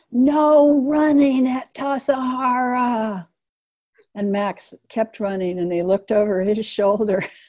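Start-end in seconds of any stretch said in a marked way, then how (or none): 0.1-3.2 slow, drawn-out, loud, high-pitched yell. Retelling how they yelled into the silence at someone running, re-enacting own yell. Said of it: "I yelled into the silence".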